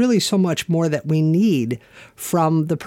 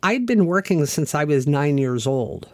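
normal talking voice

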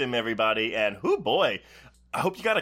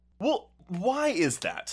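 high, surprised, puzzled, confused tone; 5 semitones higher than usual. Host asking the guest a follow-up question: surprised and confused. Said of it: "You sound surprised and confused".

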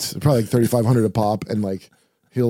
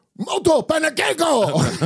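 mock very high, shrill yell. Speaker retells yelling a line from a film at someone; Inherent Vice yelling impression. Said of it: "He's yelling at the Japanese guy".

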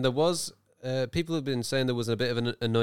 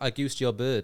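usual speaking voice

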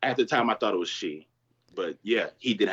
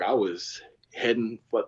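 ordinary delivery

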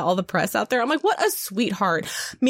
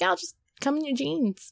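put-on Scottish voice, higher and quieter; 5 semitones higher, 6 dB quieter than usual. Imagining what Rose Leslie said about the wedding outfits: Rose Leslie impression. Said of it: "My Rose Leslie impression is on point".

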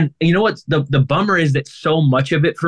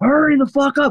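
mock scream, higher; 10 semitones higher than usual. Retelling a friend losing it on a trip: imitating a friend screaming. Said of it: "screaming at the top of his lungs".

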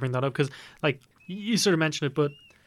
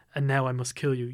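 put-on deep, smooth, menacing voice; 3 semitones lower than usual. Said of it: "the deep, smooth voice".

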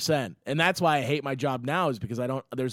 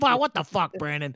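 mock grumpy old woman voice, higher and louder; 4 semitones higher, 4 dB louder than usual. Retelling a grumpy coworker cursing while walking by: imitating a cranky old woman. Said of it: "as she's walking by, like".

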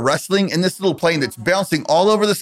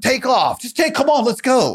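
high-pitched yelling; 7 semitones higher than usual. Retelling waiting on a runway in a hurricane: imitating Tim yelling. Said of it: "Tim's yelling at them".

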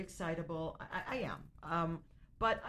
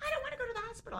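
very high, shrieking, screaming outburst. Retelling the mother's reaction during the night: imitating mother screaming. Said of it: "she screams like a typical".

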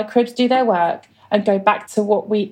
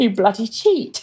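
put-on grinning, teasing tone. Retelling what a man said after his toast explanation, imitating a grinning jibe. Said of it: "he said it with a big grin on his face".

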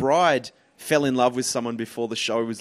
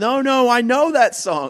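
mock very high-pitched drunk voice, drawn-out and insistent; 12 semitones higher, 6 dB louder than usual. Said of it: "she's drunk off her head".

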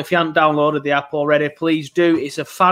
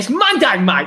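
put-on, pitched-up Cockney accent; 5 semitones higher than usual. Speaker retells being corrected about the game day: imitating his Cockney accent. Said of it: "In his Cockney accent".

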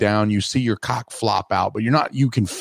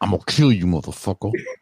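menacing, threatening tough-guy voice; 3 semitones lower than usual. Joking about a haunted room, imitating a threatening ghost pimp. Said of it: "her pimp is gonna be like".

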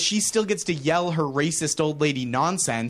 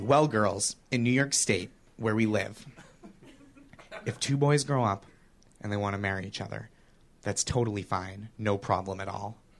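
mock earnest, very sincere, plain straightforward tone; 7 semitones lower, 5 dB quieter than usual. Retelling what he told a room of four-year-olds: retelling a sincere reply. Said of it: "I say to them very sincerely".

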